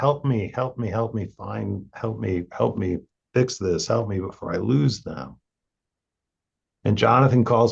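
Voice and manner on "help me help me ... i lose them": put-on, acted desperate wailing. Recounting what a partner cried out for help, retelling a desperate wail. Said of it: "and starts wailing".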